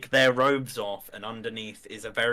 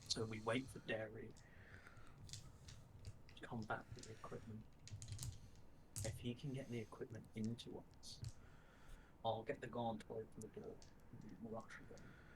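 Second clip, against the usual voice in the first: very quiet, hushed, breathy whisper; 23 dB quieter than usual. Laying out an escape plan to the group: whispering. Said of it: "any of my whispering".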